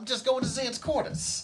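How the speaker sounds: put-on thick Brooklyn accent, very high-pitched. Joking about the puppet voiced by a stagehand: thick Brooklyn accent. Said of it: "thick Brooklyn accent".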